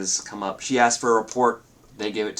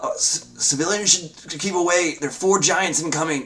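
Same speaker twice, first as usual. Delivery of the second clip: frightened, high, panicked, stammering shout; 8 semitones higher, 3 dB louder than usual. Voicing town guards warning approaching adventurers: panicked guard voice. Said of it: "you hear, like, the panic in their voice".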